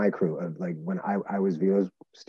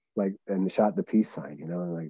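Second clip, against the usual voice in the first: ordinary delivery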